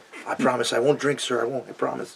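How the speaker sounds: quiet, timid, innocent voice. Retelling answering a doorman, imitating a timid voice. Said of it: "timid, real timid".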